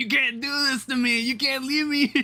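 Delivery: silly, high, funny cartoon talking-fish voice. Retelling a scene where a fish left in an empty tank talks, funny talking-fish voice. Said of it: "In this really funny voice".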